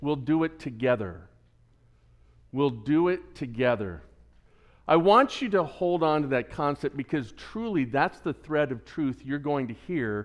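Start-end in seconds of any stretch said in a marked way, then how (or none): 0.0-4.0 very calm, even-keeled, reassuring delivery. Retelling a scene where a hero answers the panic: imitating Captain America speaking calmly. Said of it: "Captain America very calmly says".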